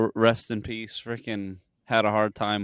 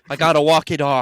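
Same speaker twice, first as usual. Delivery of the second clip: put-on pained comedian voice, higher and louder; 5 semitones higher, 5 dB louder than usual. Imitating Bill Burr suffering after hot wings: imitating Bill Burr suffering. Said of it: "Like Bill Burr, when he's like".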